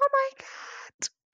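put-on, very high, sugary, cute girly voice. Imitating a girl in a restaurant doing a cute voice. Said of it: "that cute thing with her voice".

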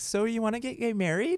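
put-on Midwest accent. Showing how people from the Midwest would ask the question, in a Midwestern accent. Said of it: "I'm from the Midwest, so it's like".

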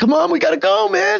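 very high, ragged, rough yell. Voicing a character calling to another from the doorway: yelling. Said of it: "he's yelling to Derek".

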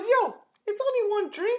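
very high-pitched put-on voice. Retelling how a voice spoke up before a shot: the voice in his head. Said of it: "it goes the voice again".

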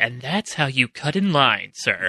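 true half-whisper with no voice. Voicing a character speaking quietly to another character: half-whispering. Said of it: "Rodney whispers to Billy".

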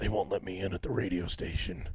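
low, very quiet, barely audible murmur. Joking about the podcast with another speaker, Nicolas Cage voice. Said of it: "Are you Nicolas Cage?".

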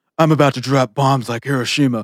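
mock loud climaxing man. Retelling a line from a porn video, mimicking a loud climaxing man. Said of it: "the guy's like a really loud comer".

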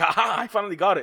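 put-on, high, laughing, gleeful triumphant delivery. Retelling finally getting a reading line out: imitating own triumphant laughing read. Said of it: "I did it with the inflection".

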